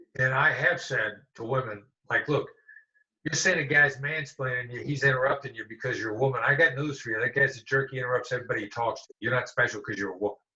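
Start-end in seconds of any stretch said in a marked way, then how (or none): none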